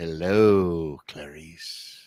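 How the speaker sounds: very low, eerie, hushed film-villain drawl. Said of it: "it was so creepy".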